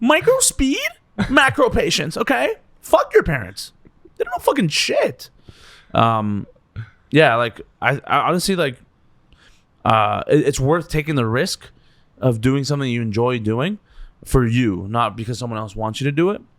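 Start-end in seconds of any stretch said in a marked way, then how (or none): 0.0-5.3 very high delivery with wildly swooping pitch. Giving advice to aspiring comedians after being asked: Gary Vee voice. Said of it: "you have to do it in a Gary Vee accent".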